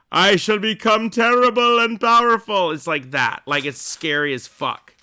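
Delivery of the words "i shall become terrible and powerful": booming, grand, terrible, over-dramatic elf voice, pitched up. Describing a character's voice, speaker imitates an elf from Lord of the Rings, mock-booming. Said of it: "the elf bitch was all like".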